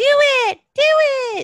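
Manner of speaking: very high, drawn-out puppet voice. Acting out a puppet popping up behind a rock: imitating Ramblin' the puppet. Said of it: "popping up behind a rock and be like".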